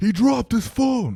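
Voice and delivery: furious, shrill, very loud, very high yell. Retelling what the man behind them yelled, imitating a pissed-off yell. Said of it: "pissed, yells like".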